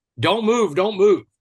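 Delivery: mock, loud, high scream at the top of lungs. Retelling waking up with a SWAT officer over him: imitating the officer screaming. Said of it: "he's screaming at the top of his lungs".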